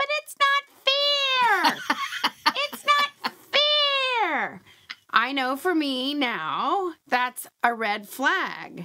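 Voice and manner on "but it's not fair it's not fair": put-on very high little girl voice, drawn out. Describing the voice in her head, the speaker imitates a little girl voice. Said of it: "that little girl voice in my head going".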